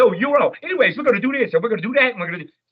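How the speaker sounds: very fast, very high-pitched, rattled-off delivery. Describing Eddie Murphy playing Donkey in Shrek: fast Eddie Murphy impression. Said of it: "So he talks really fast like that".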